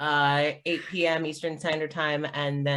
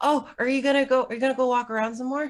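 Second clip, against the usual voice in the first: put-on child voice, much higher; 9 semitones higher, 4 dB louder than usual. The kid Kevin scrambles up as the visitors head for the door: Kevin, a kid's voice. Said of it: "It's like".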